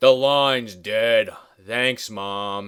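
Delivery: very slow, thoroughly exasperated drawl. Retelling a film scene where the husband finds the phone line dead: imitating an exasperated husband. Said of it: "he gets all exasperated".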